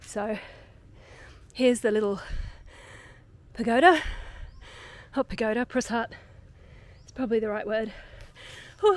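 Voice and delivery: winded, breathless, out of breath. After jogging to reach a corner before the light goes, out of breath. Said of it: "forgive me. Out of breath".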